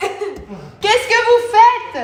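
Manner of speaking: high, very slow, loud, exasperated laughing shout.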